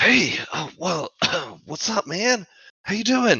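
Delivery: very high, loose, swooping stoner-style voice. The game master voices the summoned Sunbeam greeting the party, in stoner Sunbeam voice. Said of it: "Stoner Sunbeam".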